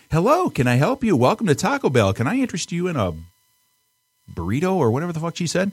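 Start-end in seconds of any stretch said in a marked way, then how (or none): 0.1-4.7 high, very happy, cheery female voice. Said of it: "it's a very happy female voice".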